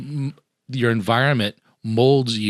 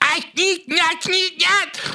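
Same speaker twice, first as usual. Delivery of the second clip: put-on shrill, very high, drawn-out screaming rant. Imagining a historical figure as the worst Uber driver: screaming Hitler impression. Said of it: "he'd be screaming ... That was a good impression of Hitler".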